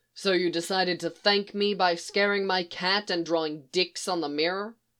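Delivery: ordinary delivery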